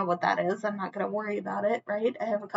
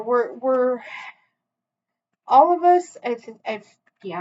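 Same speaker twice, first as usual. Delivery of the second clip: stammering, restarting, tangled words, raised, stuttering false starts; 3 semitones higher, 9 dB louder than usual. Addressing the viewers mid-talk, stuttering. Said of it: "I'm stuttering".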